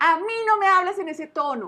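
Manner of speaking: loud, high-pitched scolding.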